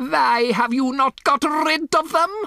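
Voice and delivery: very high, shrill, demanding scream. A woman screams a demand at her listeners; screaming. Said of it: "she screamed".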